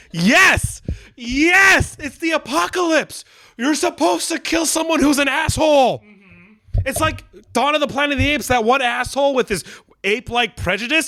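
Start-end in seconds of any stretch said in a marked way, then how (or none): 0.1-5.9 play-acted thrilled high cheer, yes stretched long. Retelling how they reacted watching a killing on the show: excited cheering. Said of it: "I'm like this".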